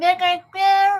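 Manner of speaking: high, loud, excited yell.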